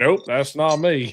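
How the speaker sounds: really bad put-on Southern accent, loud and slow. Retelling how a soccer player answered fans: imitating a really bad southern accent. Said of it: "that really bad Southern accent".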